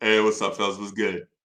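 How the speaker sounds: deep voice with a little bass. Recalling greeting the guys at the store, a little bass in voice. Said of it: "I started talking with a little bit of bass in my voice".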